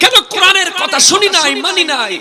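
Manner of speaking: loud, high-pitched wailing scream.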